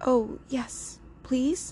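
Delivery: high stage whisper. Lucia answers a troll who asks if she wants the sun, whispering. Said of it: "whispered Lucia".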